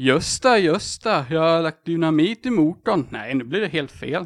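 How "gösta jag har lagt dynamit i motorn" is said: Småland accent, louder and slower. Given a line to say in Småland dialect, a player has a go: trying a Småland accent. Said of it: "vad du ska säga på småländska".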